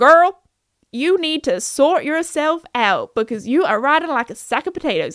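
talking horse voice in a put-on American accent. Spelling out what his squeal meant, in a put-on American accent. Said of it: "I don't know why I went into an American accent there".

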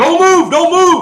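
shrill screaming at full lungs. Telling a story about waking with a SWAT cop over him; retelling a cop's scream. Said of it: "he is screaming at the top of his lungs".

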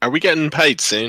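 put-on English accent. Speaking in character, asking about pay: british accent. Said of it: "going into, like, a British accent there".

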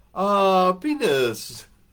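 put-on Filipino accent. Retelling a woman's answer to a question, imitating a Filipino accent. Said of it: "in her beautiful Filipino accent".

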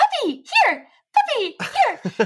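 eager, excited, very high-pitched calling voice. Demonstrating how one calls a pet dog, excited high voice. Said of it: "as soon as I get really excited".

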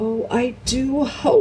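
tremulous voice. Lucy answers Susan, who insists she has been dreaming; tremulous voice. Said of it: "said Lucy in a tremulous voice".

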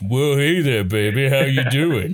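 put-on macho tough-guy voice. Mocking the old dub's portrayal for another speaker: imitating the 4Kids Sanji voice. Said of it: "Macho Man Rocky Balboa type thing".

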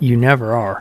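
ordinary delivery

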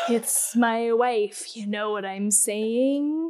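slow, drawn-out, heavily overacted delivery. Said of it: "overacted bullshit".

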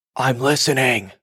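put-on woman calling out in a South African accent. Speaker retells a voice in their ear, imitating a South African woman shouting. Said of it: "I hear this frickin' South African woman in my ear, like, shouting".

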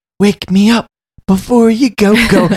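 whispered voice. Retelling how a character in a scene whispered to a woman: retelling a whisper. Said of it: "he whispers".

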